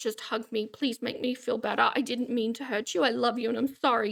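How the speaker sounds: put-on timid, meek, begging and apologetic voice. Describing a woman's fallback tactic when tantrums fail, imitating a meek plea. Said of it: "this kind of meek".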